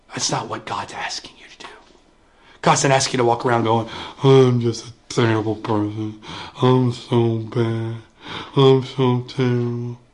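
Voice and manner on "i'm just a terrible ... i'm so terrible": very slow, mumbling boxer voice, dragging every word. Mocking people who keep calling themselves terrible, in a Rocky impression. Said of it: "Kind of sounded like my Rocky impression".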